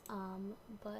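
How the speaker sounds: talking very quietly, soft and hushed.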